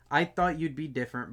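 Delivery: ordinary delivery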